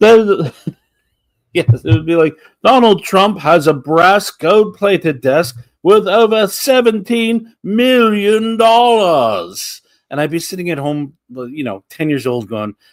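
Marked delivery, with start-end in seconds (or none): 2.6-9.8 lavish, grandiose showman voice, high, slow, drawn out. Recalling a TV show watched at ten years old, in an opulent Robin Leach voice. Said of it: "somehow he made his voice opulent".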